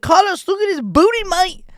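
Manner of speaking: very high, squeaky caricature voice. Retelling what a fighter said during the fight: Ian Garry impression. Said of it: "my impersonation is spot on".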